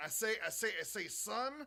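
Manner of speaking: high, theatrical put-on character voice. Looking at an animation cel and quoting the character: Foghorn Leghorn voice. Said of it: "Foghorn Leghorn".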